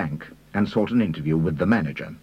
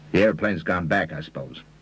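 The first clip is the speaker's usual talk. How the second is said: plain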